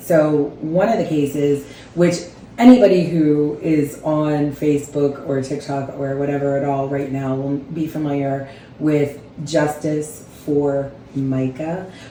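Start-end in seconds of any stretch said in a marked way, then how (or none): 9.5-11.9 very slow, deliberately drawn-out delivery. Naming a widely shared case so it is heard right, said very slowly. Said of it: "I have to say very slowly like that".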